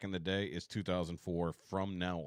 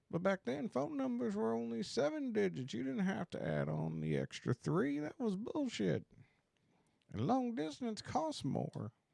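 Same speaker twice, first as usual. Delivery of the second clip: fake tipsy old-timer voice, higher pitch. Reminiscing about old telephones in a put-on Friday night tequila voice. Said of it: "it's my Friday night tequila voice".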